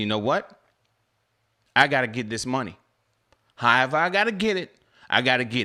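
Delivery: pissed-off, fed-up voice. Retelling what was said after losing income, retelling own angry words. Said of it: "I got pissed off and I said".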